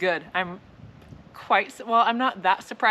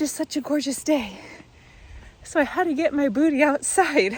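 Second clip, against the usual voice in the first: winded, breathless, high-pitched chatter; 6 semitones higher than usual. Talking to listeners while out on a walk, out of breath. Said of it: "but I am out of breath".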